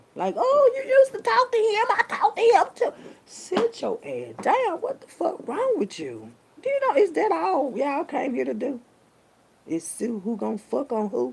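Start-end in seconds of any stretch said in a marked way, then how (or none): 0.4-2.9 very high, shrill, loud, ridiculing mocking voice. Imitating people who are emotional creatures: mocking an emotional voice. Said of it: "Y'all emotional creatures".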